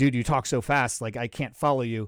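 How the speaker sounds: ordinary delivery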